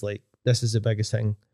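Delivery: ordinary delivery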